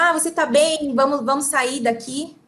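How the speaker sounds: normal talking voice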